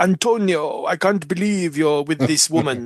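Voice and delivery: clumsy, bad put-on Spanish accent. Imitating Tony's father scolding him in a TV show: bad Spanish accent. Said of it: "that's a Spanish ac-".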